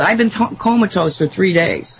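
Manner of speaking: plain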